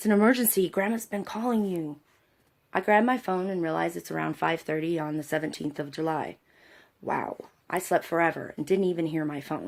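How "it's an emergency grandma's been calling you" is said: mock, mild, half-hearted shout. Retelling Elijah answering at the opened door: imitating someone yelling back. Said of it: "he began to yell back".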